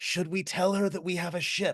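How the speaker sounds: theatrical stage whisper, loud enough for everyone. Turning to another character as Trent, in a stage whisper. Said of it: "say in a stage whisper".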